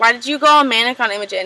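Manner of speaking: ordinary talk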